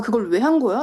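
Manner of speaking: normal talking voice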